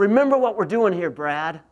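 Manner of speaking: booming, very loud, gruff coach voice. Retelling what the coach said to him, imitating the coach's gruff voice. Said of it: "with a gruff voice".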